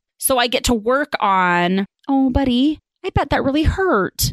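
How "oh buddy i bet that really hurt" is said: pitched-up sympathetic, empathetic tone. A mother shows how she answers her son's complaint, empathetic tone. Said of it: "Hear how that's a little bit different?".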